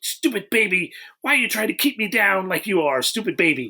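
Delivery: cross, fed-up, angry scolding tone. Imitating a film character scolding her baby: imitating angry scolding. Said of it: "angry at her stupid baby".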